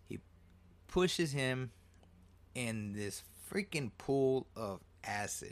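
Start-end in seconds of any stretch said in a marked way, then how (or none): none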